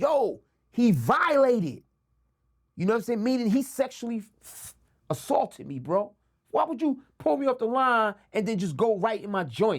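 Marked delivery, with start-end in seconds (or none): 0.0-1.8 loud, shouted, called-out yell. Retelling a beating, imitating own past yelling. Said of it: "I'm trying to yell out".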